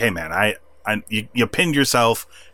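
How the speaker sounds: ordinary talk, nothing marked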